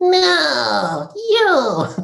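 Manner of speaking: very high, shrill, swooping cartoon voice, "no" stretched high. Voice actor demonstrating a character they voiced, in the You character voice. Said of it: "speaks with a sort of high pitched".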